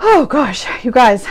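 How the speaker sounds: slightly winded, catching breath. A host greets viewers on a live stream after running downstairs, a little out of breath. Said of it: "I'm a little out of breath".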